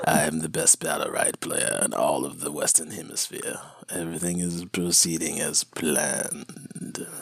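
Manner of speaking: hushed, scheming, evil emperor villain voice. Recording a clip for the other person's stream, doing an Emperor Palpatine voice. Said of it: "do you have an Emperor Palpatine voice?".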